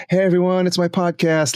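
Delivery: showy on-stage host voice. Imitating podcasters from radio or public speaking: imitating an on-stage radio voice. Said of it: "they're on stage".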